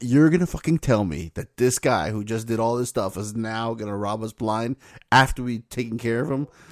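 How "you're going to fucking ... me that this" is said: ordinary delivery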